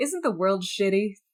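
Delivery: put-on sarcastic, crass character voice. Retelling a book character's outlook, imitating a sarcastic, crass character. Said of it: "he's just a sarcastic, crass, like".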